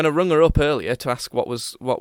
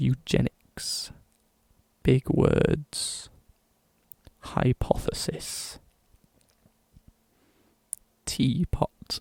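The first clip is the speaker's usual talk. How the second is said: whispered, very slow, hushed late-night radio murmur; 6 dB quieter than usual. Playing a late-night radio broadcaster saying big words: soft late-night radio voice. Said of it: "they say it very softly into the microphone".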